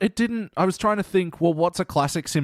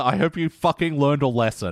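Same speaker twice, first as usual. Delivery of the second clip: ordinary talk, nothing marked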